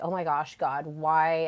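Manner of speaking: mock crying and sobbing. Retelling a painful trigger moment, imitating own past crying. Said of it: "I'm just crying profusely".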